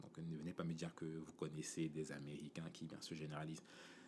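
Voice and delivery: unvoiced, soft whispered aside.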